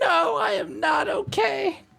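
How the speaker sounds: very high, very loud, frantic, shrill, drawn-out cry. Playing a droid, answering whether it is okay: frantic. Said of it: "Frantic beeping, frantic beeping".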